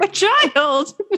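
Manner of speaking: mock anguished, high, strained wailing cry. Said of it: "And I'm like".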